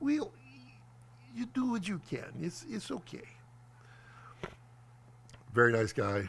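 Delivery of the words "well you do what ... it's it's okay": put-on soft, hushed, breathy Ukrainian accent. Retelling the VFX guy's reply about the drive: imitating Sergey's Ukrainian accent. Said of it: "the perfect Ukrainian accent".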